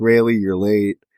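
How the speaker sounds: put-on tearful crying speech. Retelling a reunion scene, the character crying: retelling a tearful line. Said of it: "they cry with each other".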